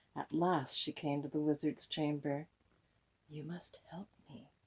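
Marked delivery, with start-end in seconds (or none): 3.3-4.4 hushed, very soft, breathy whisper under the breath. Reading a story: the princess reaches the wizard's chamber, whispering. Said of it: "whispered Princess Leora".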